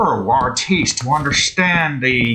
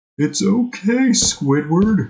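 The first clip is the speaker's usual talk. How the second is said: put-on animated cartoon sidekick voice; 4 semitones higher than usual. Playing a game and talking to Squidward: Patrick voice. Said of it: "I swear I had a better Patrick voice".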